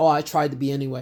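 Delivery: acted, low, snide, sarcastic snarky aside. Calling out the other person's slipped-in reply, mocking a snarky remark. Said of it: "slip in that little snark".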